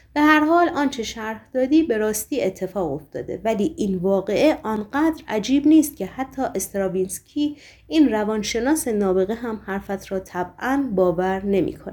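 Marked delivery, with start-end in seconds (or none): none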